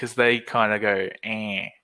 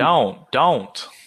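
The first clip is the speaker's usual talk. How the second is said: clumsy fake American accent on "don't"; 3 semitones higher, 4 dB louder than usual. During a lesson, the speaker tries a word in a bad American accent. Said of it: "in an American accent".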